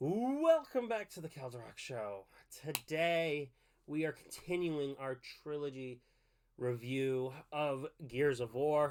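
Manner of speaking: deflated, weary, defeated and beaten-down delivery. Opening a review episode after repeated recording issues, sounding defeated. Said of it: "Why do I sound defeated?".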